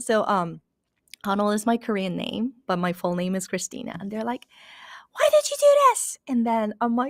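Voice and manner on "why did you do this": very high, furious, angry shouting. Speaker recounts people in China yelling at her on the phone, retelling a phone yell. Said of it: "people were yelling at me on the phone".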